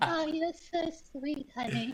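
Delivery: put-on grandma voice, very high. Joking with others about granny style, the speaker slips into a grandma voice. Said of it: "everyone's grandma voice is coming out".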